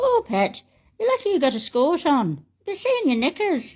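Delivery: poorly done fake Irish accent. Retelling what an Irish man said outside a Westport shop, in a bad Irish accent. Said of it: "I'm not very good at an Irish accent".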